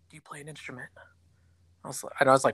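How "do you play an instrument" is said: very quiet hushed aside, close to the ear. Retelling an instructor asking a question in the ear: imitating someone speaking quietly. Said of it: "real quietly in my ear".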